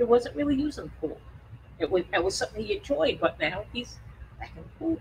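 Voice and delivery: emotional, choked-up voice catching, near breaking. Telling how a sick pet stopped using the pool: choked up. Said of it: "I'm gonna get choked up now".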